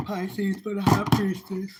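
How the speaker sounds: talking through a yawn. Reading tarot cards aloud to viewers, yawning while talking. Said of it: "I'm sorry for yawning".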